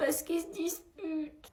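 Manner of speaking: high, soft, slow tearful voice. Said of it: "pourquoi tu pleures?".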